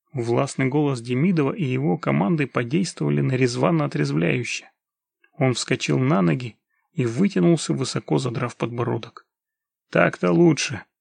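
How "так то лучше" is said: grumbling, muttered voice. Narrator reads a merchant after a man snaps to attention, grumbled. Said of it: "проворчал купец".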